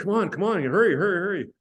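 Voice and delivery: play-acted very high-pitched pushy yelling. Retelling how a roommate rushed him out the door: imitating someone yelling. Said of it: "he's yelling at me".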